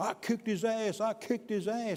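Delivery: put-on high-pitched screaming. Retelling a brother running up to the officer: imitating someone screaming. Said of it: "screaming at me".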